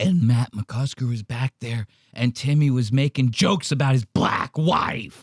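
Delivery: put-on rattling, rattled voice. Imitating someone telling a story about jokes on a show: imitating a rattling voice. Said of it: "I like the way he rattles his voice".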